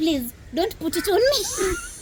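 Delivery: frightened, scared, very high-pitched voice. Begging another speaker not to put a snake on them: scared pleading. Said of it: "I'm so scared".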